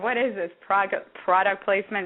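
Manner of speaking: normal talking voice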